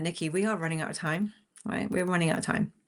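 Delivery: ordinary talk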